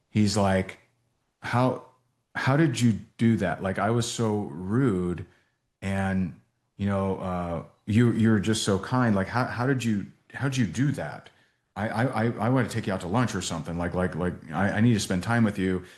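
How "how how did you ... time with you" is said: mock tearful voice, catching, stumbling and halting. Retelling an audio message someone left after a kind text: imitating someone choking up. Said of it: "he's choking up".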